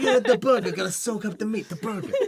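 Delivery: Italian mobster-style accent. Teasing another speaker for how they talk about burgers: imitating a gangster italian accent. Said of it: "gangster kind of Italiano kind of".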